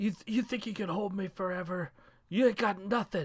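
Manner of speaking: furious, angry shout, pitched high. Voicing a character bursting into flames in a fight: shouting in character. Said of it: "he shouts".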